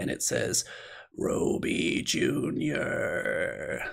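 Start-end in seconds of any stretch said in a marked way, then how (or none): 1.2-3.8 whispered dry croak, like dead leaves. Narrating the scene, the speaker voices something calling from the silent waves, in a croaking voice. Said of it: "croaking voice, like stepping on dead leaves".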